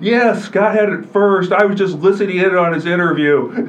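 big booming voice, very loud, pitched high. Retelling what Ed said back to the Quad City Times over the walkie talkie, big booming voice. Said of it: "in his big booming voice".

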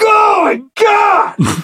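exasperated tone. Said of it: "Just like".

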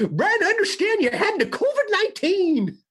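put-on old prospector voice. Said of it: "just did it that way".

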